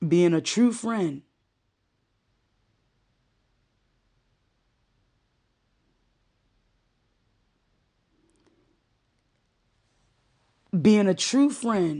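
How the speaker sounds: choking up, voice catching with emotion. Talking about a friend's diagnosis, choking up. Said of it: "and I'm choking up".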